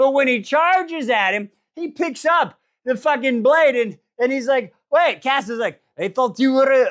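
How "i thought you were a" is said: put-on French accent. Retelling a fighter's protest in a story: French accent. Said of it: "why am I going French?".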